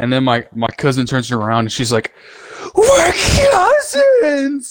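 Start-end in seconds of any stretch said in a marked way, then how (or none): 2.7-4.7 mock yelling, much higher. Retelling how the cousin turned around and answered the friend, retelling a yell. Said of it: "she just freaking yells it".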